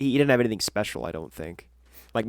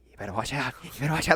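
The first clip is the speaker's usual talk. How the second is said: repetitive, looping, stuck-loop delivery; 7 dB quieter than usual. Retelling what a game captain kept repeating: imitating Crimp the Lookout. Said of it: "He comes over to him and he's just like".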